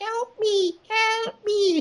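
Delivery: tiny, squeaky, very high little voice. Describing a film scene remembered from age eleven, imitating a tiny little voice. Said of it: "tiny little voice at the end going".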